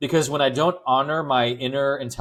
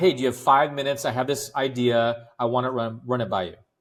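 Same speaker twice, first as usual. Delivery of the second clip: confident, self-assured, steady pitch, fully believing. Demonstrating how to ask someone for five minutes: steady, self-assured tone. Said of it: "you can hear in my tone, I believe myself".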